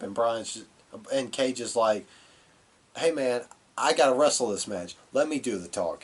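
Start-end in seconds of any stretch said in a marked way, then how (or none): none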